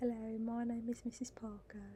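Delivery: put-on royal-sounding, upper-class English accent. Recalling how a woman introduced herself, in Missus Parker's posh British accent. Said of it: "That's what it sounded like. It was a very, what I assumed the Queen would sound like".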